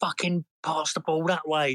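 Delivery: fed-up shout thrown out, half-voiced. Retelling shouting at a player during a football match, acting out your own shout. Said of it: "I was just shouting".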